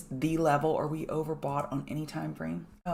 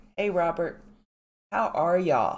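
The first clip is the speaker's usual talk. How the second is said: sick, ailing, terrible-sounding voice; 4 dB louder than usual. Greeting the pregame crew by name this morning, voice sounding terrible. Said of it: "I didn't know I was going to sound this terrible".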